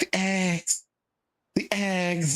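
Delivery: mock-excited, breathy delivery. Imitating how a woman always said a word, mimicking overexcited breathy delivery. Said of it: "putting a little bit too much excitement into it ... just exhaling a lot into it".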